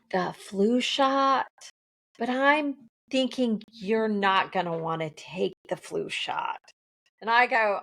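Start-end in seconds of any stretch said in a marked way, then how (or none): 0.1-6.6 discreet, confiding, confidential aside tone. Retelling picking up a prescription, the speaker quotes the woman at the counter in a lowered voice. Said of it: "she lowers her voice".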